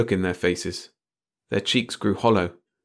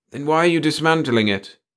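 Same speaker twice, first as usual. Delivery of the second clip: anxious, uneasy, worried, pitched up; 5 semitones higher than usual. The chief asks a question, worried. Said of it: "the chief asked with a worried frown".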